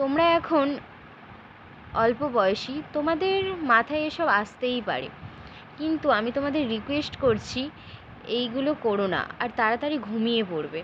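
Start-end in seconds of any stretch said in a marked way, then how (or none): none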